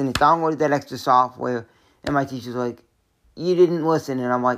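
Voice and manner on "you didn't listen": plain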